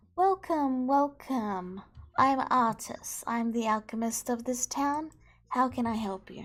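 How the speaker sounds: put-on smiling voice. Narrator voicing the elf alchemist greeting the arriving party, Artis with a forced smile. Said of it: "breaking out into a forced smile as she".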